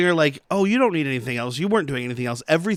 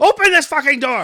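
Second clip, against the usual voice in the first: mock, piercing, shrill, very high-pitched screaming; 11 semitones higher, 6 dB louder than usual. Retelling a film scene, imitating Sir Didymus screaming at the gate. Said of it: "Sir Didymus is just screaming at the gate".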